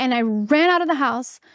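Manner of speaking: normal talking voice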